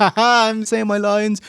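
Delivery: put-on cheerful villain tone. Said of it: "trying to be a chicken shit happy heel".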